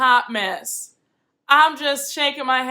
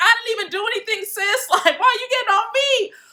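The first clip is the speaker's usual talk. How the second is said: put-on shaken, cornered-sounding voice, pitched high; 10 semitones higher than usual. Retelling how someone reacted after being gone off on, imitating shaken Keely. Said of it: "because Keely was shook".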